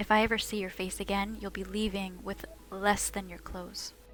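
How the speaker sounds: whispered, very soft, barely audible. Speaking in character, getting in really close to his ear: whispering. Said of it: "I'm gonna whisper".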